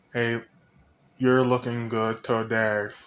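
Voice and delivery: deep, flat, dead-level monotone with zero feeling. Example of greeting someone with no emotion: flat emotionless Arnold Schwarzenegger voice. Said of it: "Talking like Arnold Schwarzenegger without any emotion".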